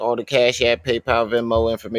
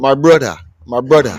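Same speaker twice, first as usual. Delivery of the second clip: put-on Jamaican accent, louder; 2 semitones higher, 8 dB louder than usual. Imitating how Sigma used to talk: imitating Sigma's Jamaican accent. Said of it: "That's how Sigma talk".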